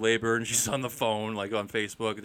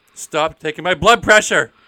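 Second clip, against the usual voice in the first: very loud, high-pitched shout; 6 semitones higher, 15 dB louder than usual. Acting out the movie scene of shouting at the nurse: imitating shouting at a nurse. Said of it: "Just shouting at the nurse".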